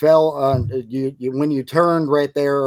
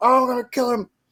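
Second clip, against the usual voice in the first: mock panicked outburst, higher; 10 semitones higher than usual. Retelling how the DEA agent acts in the scene: imitating someone freaking out. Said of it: "just freaks out and starts being like".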